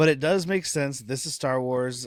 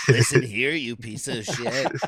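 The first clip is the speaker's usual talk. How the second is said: harsh, berating voice; 2 semitones lower than usual. Wishing for a Lego cereal set with a voice modulator, doing the Edie voice. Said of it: "so you can really do the Edie voice".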